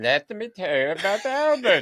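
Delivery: put-on Romanian accent. Recalling tea breaks during art lessons, quoting the woman in her Romanian accent. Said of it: "she would say in her Romanian accent".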